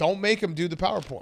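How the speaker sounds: ordinary talk, nothing marked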